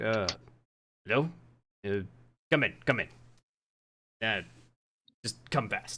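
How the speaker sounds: startled, rushed, halting delivery, caught off guard. Voicing a captain who opens his door to strangers: surprised, hurried captain. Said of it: "looks kinda surprised to see some new faces".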